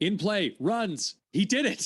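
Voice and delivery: very high, thrilled, excited yell. Retelling seeing a home run on the app: retelling own excited yell.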